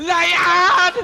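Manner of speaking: high, loud shouted lion call.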